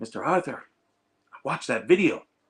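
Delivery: put-on loud, heavy Greek accent, laid on thick. Quoting his attorney after she watched the video: thick greek accent. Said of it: "has a very thick accent".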